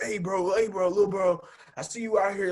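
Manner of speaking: street vendor's hustling sales voice. Retelling being approached by vendors on a street: imitating a street vendor. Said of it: "Here comes the Muslims. Like".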